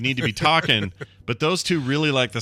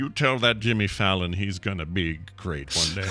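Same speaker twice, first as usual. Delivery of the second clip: put-on slow, dry producer voice, lower pitch; 4 semitones lower, 4 dB quieter than usual. Joking after being told of the impersonation: Lorne Michaels impression. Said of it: "great impersonation of Lorne Michaels".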